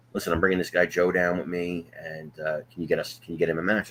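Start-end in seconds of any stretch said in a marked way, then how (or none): none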